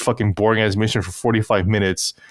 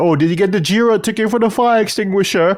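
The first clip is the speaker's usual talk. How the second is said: high-pitched newsroom-style shout; 10 semitones higher, 4 dB louder than usual. Mocking a man in a game video yelling across a tiny room; imitating someone yelling. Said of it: "he's yelling out there".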